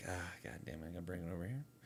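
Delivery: fast, frustrated, very low and quiet grumble. Imitating a friend working at his screens, frustrated. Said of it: "I know when he's doing his thing, he's like".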